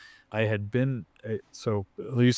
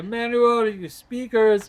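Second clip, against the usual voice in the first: shrill, high, loud put-on French accent; 13 semitones higher, 5 dB louder than usual. Retelling what a woman said after rolling her eyes: put-on french accent. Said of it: "like a French accent or something".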